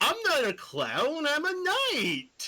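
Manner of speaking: clownish sing-song delivery. Voicing a knight who is told he sounds like a clown, clownish Pumpkin Knight voice. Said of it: "Sounds a bit like a clown".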